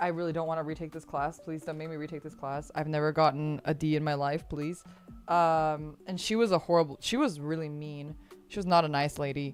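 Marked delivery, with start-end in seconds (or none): 0.0-4.8 crying, tearful, pleading tone. Retelling own past words to a biology teacher: retelling a tearful plea. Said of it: "I cried in front of my biology teacher".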